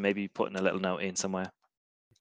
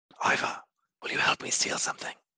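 unvoiced whisper. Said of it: "I'm whispering".

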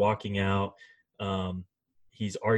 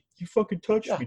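put-on very high, shrill, drunken screaming fit; 12 semitones higher than usual. Retelling a drunk fighter's outburst at a bar: imitating Mike Perry screaming. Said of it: "screaming about".

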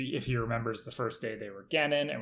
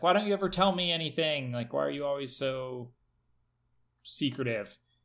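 mock pleading through tears, crying; 3 semitones higher than usual. Retelling a scene where a character starts crying: imitating someone crying. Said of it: "She starts crying".

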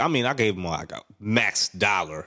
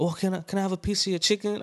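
put-on very high, sweet, overly polite voice; 11 semitones higher than usual. Retelling how a lady asked for chicken: imitating a lady asking nicely. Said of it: "she acts nice".

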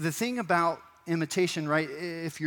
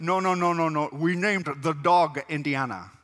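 put-on Scottish movie star voice, louder; 4 dB louder than usual. Doing movie impressions for the audience: Sean Connery impression. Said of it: "So, Sean Connery, right?".

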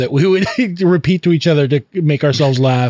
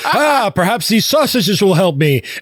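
high, swooping, lively put-on cartoon voice; 6 semitones higher than usual. Retelling a cartoon scene, acting the line: Homer Simpson voice. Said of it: "And he's like".

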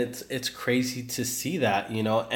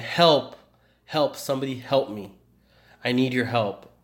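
put-on crying voice, slower. Recounting the scene where the building collapses on him, imitating Peter crying. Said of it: "And Peter's crying".

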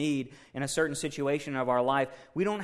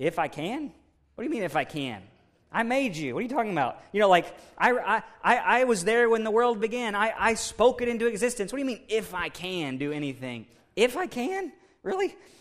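incredulous, sarcastic, pitched-up disbelief; 6 semitones higher, 4 dB louder than usual. Acting out Jesus answering a doubting father: sarcastic Jesus voice. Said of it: "there's gotta be some sarcasm in the Bible".

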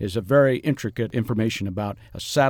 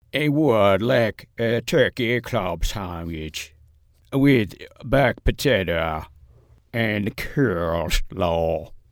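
accent from Minsk. Reading out a lunch order to the other speaker, slight Minsk accent. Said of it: "I put a little bit of a Minsk accent in there".

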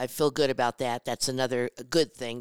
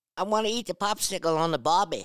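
attempted Australian accent, pitched up; 6 semitones higher than usual. Asked to do an Australian accent for Marcus, Mom gives it a try: Australian accent. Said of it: "let me hear you do an Australian accent".

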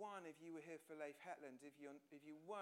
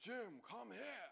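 big, booming, rough, boomy calling voice; 5 semitones higher, 4 dB louder than usual. Retelling how the finance director called him over, big boomy voice. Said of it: "he's got this big boomy voice".

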